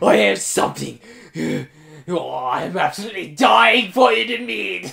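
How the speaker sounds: creaky, villainous evil scientist voice. Playing a game, mocking how a character sounds: evil scientist voice impression. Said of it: "She sounds like a fucking evil scientist".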